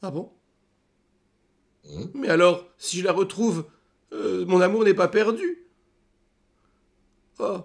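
very high, little, smitten, lovesick elf voice. Role-play player as a young elf hoping to find his sweetheart: lovesick young elf voice. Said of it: "Je suis qu'un simple petit alphelin qui était là avec son amoureuse et on était là pour s'amuser".

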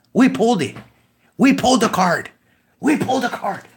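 loud, excited shouting, yelling. Having just pulled a card, loud excited shouting. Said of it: "I'm waking up the baby, guys".

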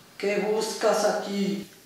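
dark, sinister, shadowy, gloomy voice. Amid bats, owls and spiders, Mictlantecuhtli questions Quetzalcóatl in a dark, gloomy voice. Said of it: "con una voz tenebrosa".

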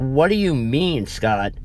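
insistent, demanding tone. The narrator presses a friend to explain what he means, demanding. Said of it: "I demanded".

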